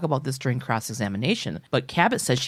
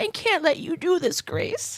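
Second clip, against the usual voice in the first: put-on elderly woman voice, pitched much higher. Playing Rose, asked by a scene partner for more of an old lady voice. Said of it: "Can you do a little more of an old lady voice?".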